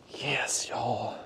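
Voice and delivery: hushed whisper. Celebrating a landed fish on camera, whispering. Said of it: "I don't know why I'm whispering".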